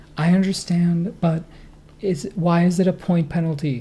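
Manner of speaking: sweet, humble, gentle pleading tone. The speaker retells how a player spoke to the umpire; imitating a gentle, pleading voice. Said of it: "she put on the most gentle, pleading voice".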